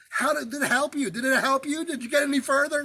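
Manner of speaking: loud high-pitched yelling. Retelling yelling at a driver who rode his bumper, at the light: retelling yelling at a driver. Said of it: "I'm like yelling".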